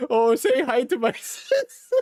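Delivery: mocking Chinese accent, high, slow and drawn out. Retelling what a guy did while mocking: imitating someone's mocking put-on accent. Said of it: "he did the, the Chinese restaurant song where he's like".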